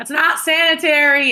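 loud called-out voice. A player character shouts back over their shoulder while leaving, shouting over the shoulder. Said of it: "I shout over my shoulder".

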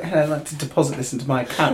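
put-on British accent. Speaker who works at a bank quoting british customers in a put-on british accent. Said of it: "so many British people that come in, and they're like".

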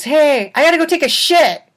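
shouting voice. Retelling a movie scene where the bartender yells across the bar: imitating someone yelling across a bar. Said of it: "he yells across to the other bar hand".

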